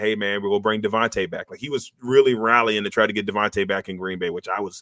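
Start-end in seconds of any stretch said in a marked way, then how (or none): none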